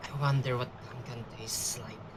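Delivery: whispering. Leaning toward the other characters in a role-play game, whispering. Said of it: "just gonna whisper".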